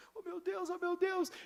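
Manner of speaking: very high, acted, weepy sobbing crying voice. Retelling a video where a convicted man starts crying: imitating a man crying. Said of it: "ele já começa a chorar".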